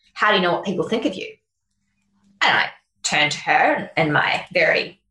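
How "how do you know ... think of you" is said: mock-deadpan delivery, much faster. Speaker retells a question someone once asked them, retelling it deadpan. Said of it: "Silky just sat there deadpan and said".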